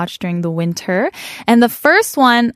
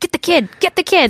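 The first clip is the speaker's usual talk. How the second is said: put-on Brooklyn gangster accent, very high; 9 semitones higher than usual. Imitating the bad guy in the movie: Joe Pesci gangster accent. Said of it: "like, the gangster accent".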